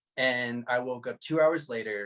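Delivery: ordinary delivery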